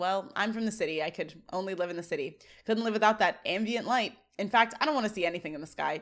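plain

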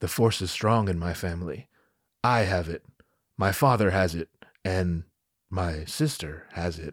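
very low, grand, dramatic, Shakespearean theatrical voice. Retelling the movie scene where Luke tells Leia, mock-dramatic Luke delivery. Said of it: "looks up at her all dramatic".

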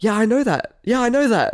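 put-on high, irritating, annoying kid voice. Retelling what a student kept saying: imitating an annoying kid. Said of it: "annoying kid voice".

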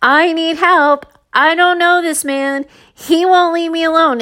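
mock yelling. Retelling being followed by a man toward a store, acting out yelling for help. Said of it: "I'm yelling at this point".

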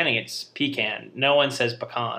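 ordinary talk

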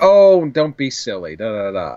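dismissive, brushing-off tone. Discussing an episode, speaker imitates the mother dismissing it: imitating a mom. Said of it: "in such a mom manner".

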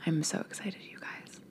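soft, breathless, giddy excited whisper.

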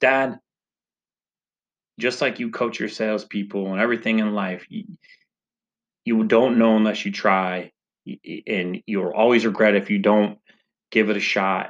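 ordinary talk, nothing marked

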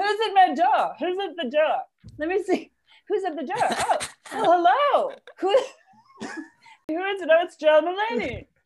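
very high, froggy puppet voice. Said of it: "it sounds like Kermit doing a share impression".

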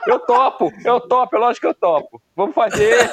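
put-on silly, dopey dimwit voice, high and goofy. Agreeing to join the plan, saying it in a goofy fool's voice. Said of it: "Não sei se tá imitando o Silvio Santos ou o Alexandre Frota".

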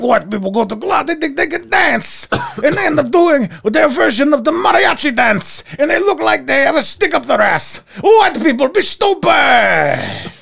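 put-on blended French and Spanish accent. Imitating a show performer's recurring joke: French-Spanish mixed accent impression. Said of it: "a cross between, like, a French and s-, and Spanish dude".

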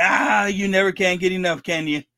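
usual speaking voice

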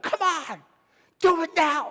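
very high, loud, urging shout. Retelling shouting at the man he pushed through exercises; retelling a shout. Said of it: "I would shout at him".

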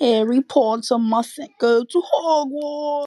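terrible put-on English accent. Answering a question about sounding like Harry Potter: terrible English accent. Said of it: "that was, like, a terrible accent".

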